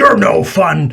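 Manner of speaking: growling troll voice. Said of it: "he growls and says".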